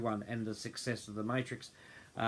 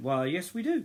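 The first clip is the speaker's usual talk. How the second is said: put-on Scottish accent, pitched up; 7 semitones higher, 4 dB louder than usual. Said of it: "she said it with a Scottish accent".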